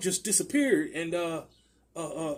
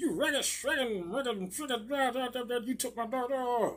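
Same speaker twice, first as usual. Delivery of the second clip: put-on angry cartoon cowboy voice, higher pitch; 6 semitones higher, 4 dB quieter than usual. Retelling what the angry neighbour shouted at the door: imitating a Yosemite Sam yell. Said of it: "She sound like Yosemite Sam".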